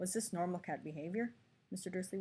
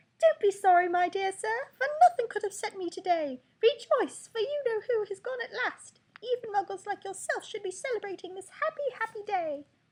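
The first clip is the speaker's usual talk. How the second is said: put-on squeaky, very high old-man voice; 6 dB louder than usual. A narrator reads an old stranger greeting Mister Dursley, in a squeaky voice. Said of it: "he said in a squeaky voice".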